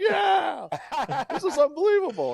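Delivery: high, excited, shouted disbelief.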